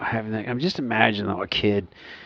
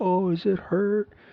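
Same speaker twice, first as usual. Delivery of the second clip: high, slow mocking taunt. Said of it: "he starts mocking their moaning".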